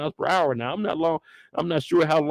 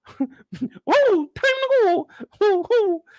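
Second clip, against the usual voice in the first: high, squeaky cartoon voice swooping up and down; 4 dB louder than usual. Acting out how a scared player sounds at first, in a Mickey Mouse voice. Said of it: "you sound like Mickey Mouse".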